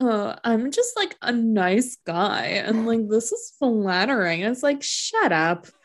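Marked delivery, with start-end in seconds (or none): 0.0-4.4 mock condescending, patronizing, falsely modest tone. Acting out how he might mean his own words, mock-condescending. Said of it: "I can read this in a condescending way".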